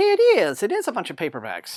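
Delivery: clumsy little cartoon bird voice, sing-song. Opening a package from Random House's rival-free mail, tell viewers what is inside in a bad Tweety Bird voice. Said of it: "in my bad Tweety Bird voice".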